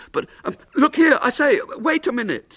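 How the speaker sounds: very high, desperate calling tone. A man calls after a little man already swinging down the hill, desperately. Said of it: "William called after him desperately".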